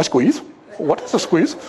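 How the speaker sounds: put-on very proper, all-proper English accent. Retelling a chat about girlfriends, imitating Les's proper English accent. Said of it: "With his English accent, you know, his all proper English accent".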